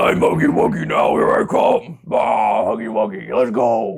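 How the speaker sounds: high, creaky voice, drawn out very slowly. Showing how the Huggy Wuggy character is voiced: Huggy Wuggy voice. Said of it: "so I just make him sound like".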